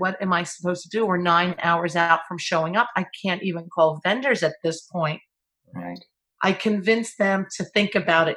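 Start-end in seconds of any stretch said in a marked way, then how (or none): none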